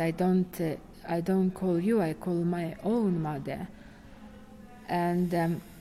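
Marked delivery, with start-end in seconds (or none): none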